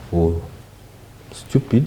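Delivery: drawn-out, slow, breathy near-whispered words. Warning viewers about who gets defrauded, speaking slowly. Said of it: "I'm saying it slowly".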